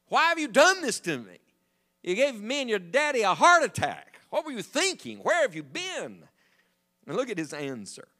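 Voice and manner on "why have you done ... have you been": mock worked-up angry scolding, pitched high. Explaining how a mother really spoke to her son, imitating an angry mother. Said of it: "She's pretty angry".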